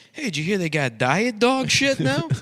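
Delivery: shrill, very high, loud put-on Chinese accent. Joking about a character who hears about diet dog shit: put-on Chinese guy voice. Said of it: "the Chinese guy that's like".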